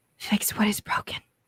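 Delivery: whispering, eerie. Voicing a presence that whispers into a player's ear: whispering presence. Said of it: "You hear the whisper of".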